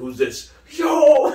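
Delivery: mock very high, loud, excited hyped outburst. Retelling a TV episode where the nephew hears Triple H: imitating someone hyped. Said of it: "He just started freaking out".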